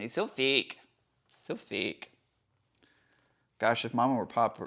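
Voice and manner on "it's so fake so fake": slow, very strong put-on Canadian accent. Repeating a line just said, in a very Canadian accent. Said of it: "Why did I say that with a very Canadian accent?".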